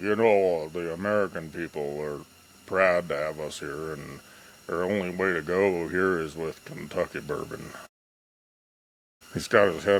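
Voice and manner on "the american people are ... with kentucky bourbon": put-on elderly politician voice with long drawn-out opening "the". Someone asks you to do it again, so repeat your Mitch McConnell impression. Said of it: "Can you do that Mitch McConnell again?".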